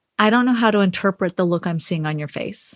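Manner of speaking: ordinary delivery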